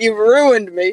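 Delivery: mock crying, frazzled. Acting out being frazzled after a hard dungeon run: mock crying, frazzled. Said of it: "I'm probably crying".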